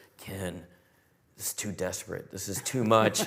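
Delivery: put-on whisper. Retelling a costar whispering in the ear during a fan event: imitating Zach whispering. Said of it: "he's whispering in my ear".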